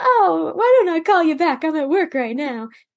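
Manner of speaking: cheery fake-casual voice. Retelling how he faked a call to a girlfriend: put-on jovial phone voice. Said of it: "pretends like he's talking to a girlfriend".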